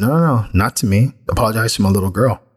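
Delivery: plain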